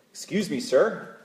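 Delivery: put-on, laid-on American accent. Telling a joke, a lost driver asks a local for directions in an American accent. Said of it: "Excuse my American accent".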